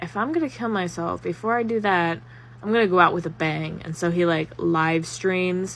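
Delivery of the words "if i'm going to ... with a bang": ordinary delivery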